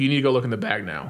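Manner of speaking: normal talking voice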